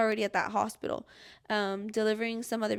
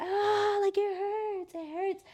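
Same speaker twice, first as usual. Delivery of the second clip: put-on very high, long, drawn-out pained scream; 10 semitones higher than usual. Speaker retells a long painful hour, acting out own screaming from back then. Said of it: "I'm like screaming".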